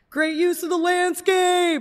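shrill, very high, loud acted yell. Retelling how Aiden yelled in the middle of everyone's swing: imitating Aiden yelling.

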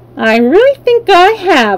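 talking-back tone. Bellina answers Dorothy after a fight with a rooster; retorting. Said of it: "retorted Bellina".

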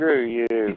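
ordinary talk, nothing marked

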